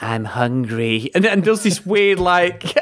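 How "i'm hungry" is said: mock campy delivery. Retelling a film scene where Riggs suddenly calms down: imitating a campy voice. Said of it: "his campy voice ever".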